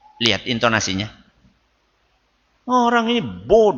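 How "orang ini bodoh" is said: raised, pitched-up, belittling, insulting voice. Speaker demonstrating how intonation changes meaning, saying it in a raised voice. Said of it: "Sambil angkat apa? Suara".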